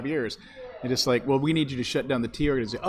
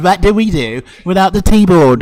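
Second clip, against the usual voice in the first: bad fake English accent, much louder; 5 semitones higher, 16 dB louder than usual. Imagining the panicked Scone Commission in a closed-door meeting, bad English accent. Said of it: "That's not even an English accent".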